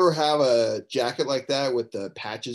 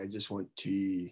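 very quiet, low, slow, drawn-out murmur; 4 semitones lower, 11 dB quieter than usual. Acting out the professor's answer when students ask what he wants, as a Professor Taylor impression. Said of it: "that's a very good impression".

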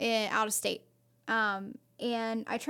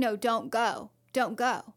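put-on, very slow, drawn-out panicked begging. Retelling how Mom suddenly pleaded against the drive: imitating someone panicky. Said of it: "she got very panicky and she was like".

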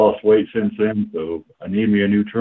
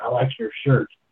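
soft, under-the-breath whisper; 4 semitones higher, 4 dB quieter than usual. Quoting supporters who came up to the speaker in public, retelling a whisper. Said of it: "kind of like whisper to me".

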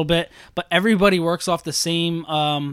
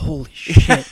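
muttered under the breath, lower and louder; 3 semitones lower, 6 dB louder than usual. Retelling what the other speaker muttered during a scary scene: imitating a curse under the breath. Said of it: "I heard you under your breath say".

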